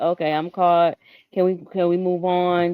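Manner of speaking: put-on voice of a defeated man. Speaker acts out a man who got caught, mock-defeated. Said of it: "He sounds defeated".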